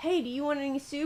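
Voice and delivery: friendly, polite, soft and sweet. At a fancy restaurant, speaker retells leaning over to him, retelling asking nicely. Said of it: "being nice".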